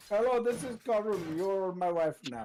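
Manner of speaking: high-pitched, exaggerated Indian accent.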